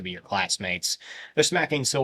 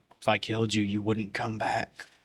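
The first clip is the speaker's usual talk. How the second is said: hushed under-breath whisper. Answering a boasting speaker in the scene, whispered under breath. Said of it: "He whispers it under his breath".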